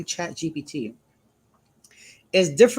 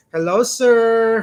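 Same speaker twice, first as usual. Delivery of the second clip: slow, loud, dragged-out delivery. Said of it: "purposely drag on their words".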